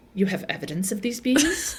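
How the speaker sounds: almost sultry, with a sultry edge. Retelling a show scene, quoting Marita's line in an imitated sultry voice. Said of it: "almost, like, sultry".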